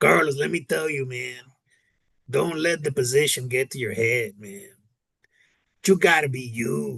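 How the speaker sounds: put-on strong Mexican accent. Telling a story about a longtime UPS driver, imitating Dave's Mexican accent. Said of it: "he talks like really Mexican like this".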